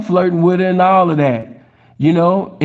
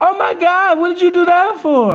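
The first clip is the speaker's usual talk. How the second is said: put-on very high, girly little girl voice; 12 semitones higher than usual.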